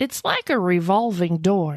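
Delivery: put-on Texas accent. Reading a news story aloud, quoting the homeowner in a Texas accent. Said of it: "use my Texas accent again".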